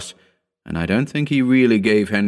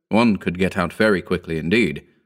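usual speaking voice

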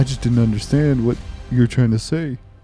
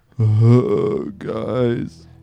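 much deeper, lower-pitched voice; 6 semitones lower than usual. Greeting the guys as Mike the Immortal, who is old: much deeper voice. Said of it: "Your voice got way deeper".

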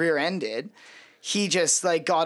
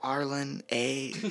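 mock whisper, quieter, lower; 3 semitones lower, 6 dB quieter than usual. Describing what you can hear her say, retold whisper. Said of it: "you can hear her, like, whispering".

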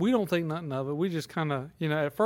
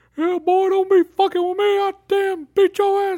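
mock shrill, booming, angry, cussing old-man voice; 14 semitones higher, 9 dB louder than usual. Retelling how an old coworker talks: imitating an angry old man. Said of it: "he just talks like that and cusses everybody out".

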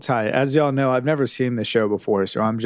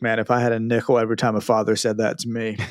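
ordinary talk, nothing marked

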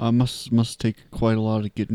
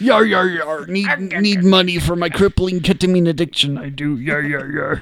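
loud, high, bellowed put-on pirate voice, yar-heavy; 8 semitones higher, 8 dB louder than usual. Joking with others, the speaker voices a cartoon character: Mr. Krabs impression. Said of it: "We just transferred from Mr. Krabs".

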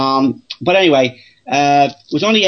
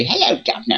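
put-on little English woman's voice, higher, quieter; 4 semitones higher, 5 dB quieter than usual. Retelling a walk across Fort Mifflin, quoting a stranger: little English woman's voice. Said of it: "you hear an little English woman say".

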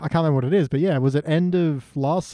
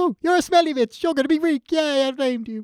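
put-on delighted voice, much higher; 11 semitones higher than usual. Recapping a scene for the other speaker, quoting the character with mock delight. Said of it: "but he says it so delightful".

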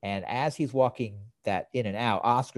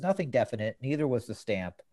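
usual speaking voice

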